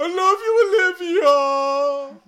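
very high yell, stretched long and drawn out. Voicing a character calling from inside the wagon: yelling. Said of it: "Smithy yells from inside the wagon".

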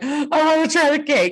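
play-acted, high, breathless, gasping and panting.

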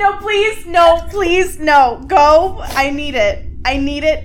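very loud, high, drawn-out screaming. Urging the other speaker to go ahead and talk: screaming. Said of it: "I don't know why I'm screaming".

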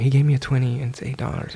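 hushed whispered stage whisper aside. Retelling what a worker said to the others about the change: imitating a whisper. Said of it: "she's whispering to them".

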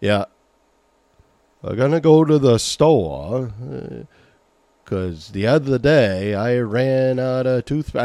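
put-on old Maine man's drawling accent. Show listeners the accent you don't want to slip into, in an old guy's Maine accent. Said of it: "old guys that talks like this".

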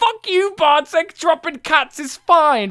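acted yelling. Imagining what he would say on the podcast to a co-host, mock-yelling at someone. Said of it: "I would say".

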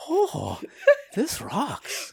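put-on soft, vaguely European accent. Asked to do Beethoven again, vaguely Euro Beethoven voice. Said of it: "That's my vaguely Euro... Euro voice".

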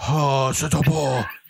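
put-on Japanese-accented English, put on. Speaker imitating how their dad does accents, put-on japanese accent. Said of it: "he starts doing the Japanese accent".

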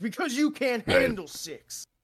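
put-on high, mild, held-back in-your-face ad yell. Describing a favorite candy slogan ad, imitating Reese's ad screaming. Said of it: "he's screaming at your face and like".

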